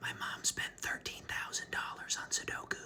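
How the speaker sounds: very quiet, hushed, confiding whisper. Retelling what a woman said to the speaker across a desk, very quietly. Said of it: "very quietly says".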